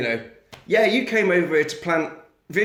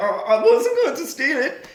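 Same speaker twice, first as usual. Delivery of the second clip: high, pitched-up put-on child voice; 9 semitones higher than usual. You act out a scene where the actor voices a child's dialogue: Jean-Claude Van Damme doing child voice. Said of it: "pretending to do the voice of a child".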